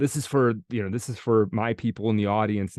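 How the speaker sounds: plain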